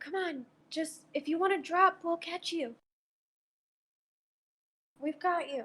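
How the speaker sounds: gentle, high, coaxing half-whispered voice. A player's character half-whispers to a stuck companion, half-whispering. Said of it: "I whispered".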